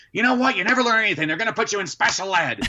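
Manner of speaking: very high, shrill, rushed, furious angry rant. Speaker retells how mom reacted to their reading, imitating mom going crazy. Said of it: "my mom would go crazy".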